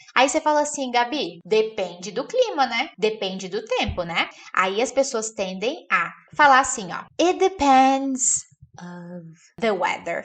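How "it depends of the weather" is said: downplayed, unemphasized, slow, throwaway delivery. Teacher demonstrates a common learner mistake, speaking quietly. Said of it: "falando baixinho para você poder não memorizar".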